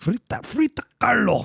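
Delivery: clumsy, high-pitched, attempted German accent. Admitting being terrible at accents, trying to say a word, attempted german accent. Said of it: "he's trying to do it in like a German accent".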